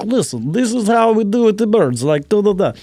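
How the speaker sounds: fake Russian accent. Retelling a bird bit he did on camera, speaking in a russian accent. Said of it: "I was trying to be Russian".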